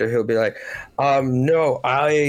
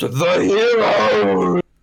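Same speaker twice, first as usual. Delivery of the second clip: put-on drunken voice, higher pitch; 7 semitones higher, 4 dB louder than usual. Voicing a drunk host raising goblets in celebration: drunk king toasting. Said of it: "thoroughly drunk".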